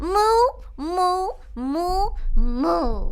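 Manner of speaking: slow, long, drawn-out, stretched mooing like a cow. Translating for the cow king, speaking cow: speaking cow. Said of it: "The hell did you just say?".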